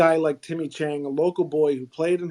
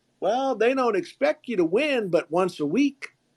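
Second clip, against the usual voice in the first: put-on Southern accent, pitched up; 6 semitones higher than usual. Retelling a coach's answer about coaching at Georgia Tech, in a Southern accent. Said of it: "in his in his best Southern accent".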